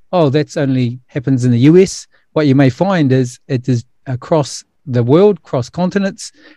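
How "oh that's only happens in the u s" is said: ordinary talk, nothing marked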